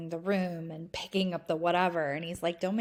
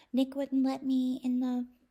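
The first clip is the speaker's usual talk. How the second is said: put-on little girl voice, much higher; 8 semitones higher than usual. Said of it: "that like little girl".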